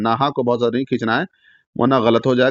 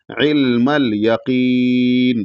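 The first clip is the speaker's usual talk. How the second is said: final vowel held long, three to four counts. Showing a learner how to pause at the verse end: final vowel held three to four counts. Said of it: "तीन से चार अलिफ के ऊपर खींच के रुक".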